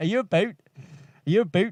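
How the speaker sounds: about said as 'a boot'. Describing how a group pronounces words, then mimicking their 'a boot' accent. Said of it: "because they always say like a boot".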